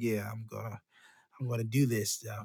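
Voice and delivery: cocky, smug, self-satisfied boastful taunting tone. Retelling a movie character's line: imitating a smirking boast. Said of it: "He had that smirk and smile".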